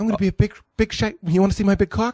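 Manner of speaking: really high, pushed-up, very high-pitched voice. Doing another impression bit: high-voiced Mark Wahlberg impression. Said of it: "He's got a really high voice".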